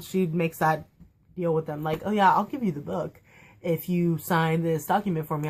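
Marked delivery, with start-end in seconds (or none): none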